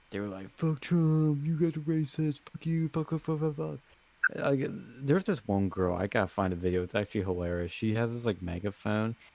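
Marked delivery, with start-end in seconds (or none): 0.5-3.8 furious, higher-pitched angry hollering. Recounting protesters yelling at his group, imitating protesters yelling. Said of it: "they were yelling at us".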